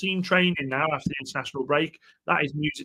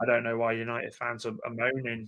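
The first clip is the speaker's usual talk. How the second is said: put-on very low, flat, dull, bored monotone drone; 7 semitones lower, 10 dB quieter than usual. Imitating a man whose talk sends the speaker to sleep: mock-bored monotone. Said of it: "I'll try and do it in the most boring voice I can".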